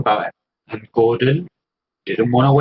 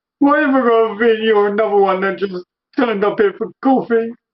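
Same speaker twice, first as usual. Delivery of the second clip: high, weepy, tearful, on the verge of crying; 8 semitones higher than usual. Voicing a fallen seller character looking up at the player: weepy, tearful. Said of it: "with these weepy eyes going".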